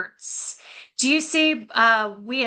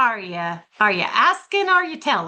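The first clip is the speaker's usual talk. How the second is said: put-on lighthearted, playful, teasing yet pointed. Retelling how she answered a kid asking for water, imitating a playful tone. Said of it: "Do you see how it's like playful".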